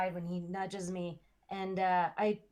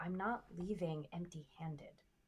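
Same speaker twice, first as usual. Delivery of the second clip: very quiet, hushed, under the breath; 8 dB quieter than usual. A player has their character speak so nobody else hears, very quietly, unheard. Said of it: "I very quietly, without anybody hearing".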